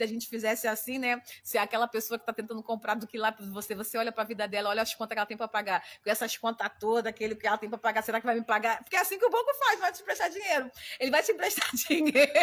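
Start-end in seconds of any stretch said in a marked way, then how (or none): 11.0-12.3 loud, words pushed out through laughter. Explaining how a bank lends money, laughing while talking. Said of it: "eu tô rindo aqui".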